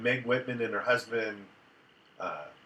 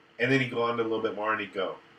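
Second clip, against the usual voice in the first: ordinary talk, nothing marked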